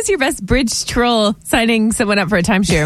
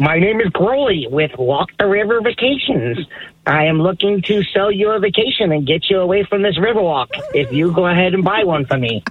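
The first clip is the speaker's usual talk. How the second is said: low put-on troll voice, salesman patter; 4 semitones lower than usual. A caller, asked by the host for his impression, in bridge troll salesman voice. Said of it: "give us the impression".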